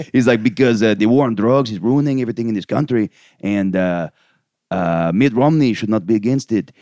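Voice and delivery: put-on Mexican accent in English. Retelling what a man's brother said in a documentary, in a put-on mexican accent. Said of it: "I'm gonna do the accent anyways".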